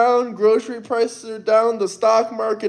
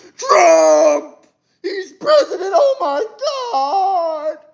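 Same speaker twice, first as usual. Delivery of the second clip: high, slow, miserable scream, "God" drawn out; 8 semitones higher than usual. Mocking people screaming at the television each morning: imitating someone screaming. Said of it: "screaming at the television".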